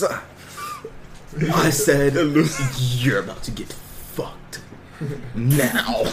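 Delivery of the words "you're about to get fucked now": demonic voice, each word slow and dragged out. Retelling bringing her close, the speaker quotes his own words in his demon voice. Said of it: "in my demon voice".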